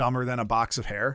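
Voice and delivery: plain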